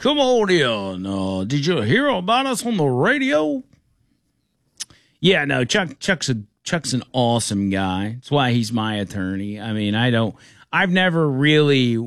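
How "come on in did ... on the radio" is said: put-on old country lawyer voice, much higher. Imagining the speaker's attorney talking like an old country lawyer. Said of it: "talked like the old country lawyer".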